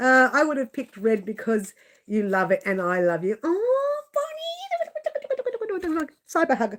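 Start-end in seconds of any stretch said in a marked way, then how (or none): 3.4-6.1 very high, very slow, cutesy little voice. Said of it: "Do you like that little voice?".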